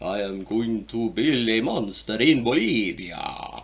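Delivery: put-on ponderous, slow, deliberate, drawn-out old-film style delivery. Teasing someone that they sound like Bela Lugosi, in a Bela Lugosi voice. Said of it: "you sound like Bela Lugosi".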